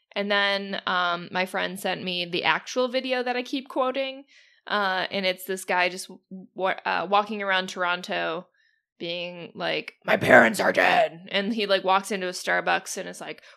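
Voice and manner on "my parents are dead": very loud, booming, full-volume shout. Retelling a video of Batman walking around Toronto: imitating Batman yelling. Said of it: "just yelling at people".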